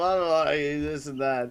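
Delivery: mock angry, pissed-off, griping tone. Imitating angry people's ban appeals: imitating an angry writer. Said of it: "all pissed off".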